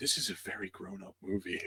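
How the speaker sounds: very quiet, low, secretive whisper. Describing a four-year-old niece during a shocking movie scene, retelling her whisper. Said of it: "just whispers to my sister".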